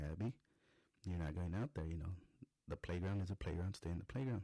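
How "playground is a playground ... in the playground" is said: ordinary talk, nothing marked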